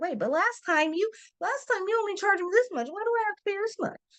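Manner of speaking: high-pitched, crazed-sounding complaining voice. Acting out a client questioning a higher rate, complaining client voice. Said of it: "my voice went a little crazy".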